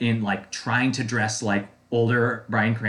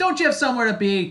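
put-on cheer, very high, sunny and chipper; 13 semitones higher than usual. Recapping a show scene, quoting one character's line to another, mock-chipper. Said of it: "he was exactly that chipper about it".

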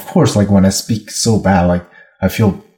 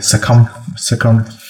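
put-on stuttering delivery. Retelling measuring a participant's head: imitating own past stuttering. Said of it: "Stu-, stuttering".

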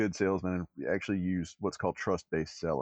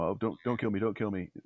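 mock begging, pleading tone. Speaker recounts a man with a revolver under his chin, retelling his begging. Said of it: "He's begging".

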